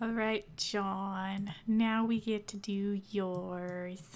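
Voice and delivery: slow, low, disappointed drone.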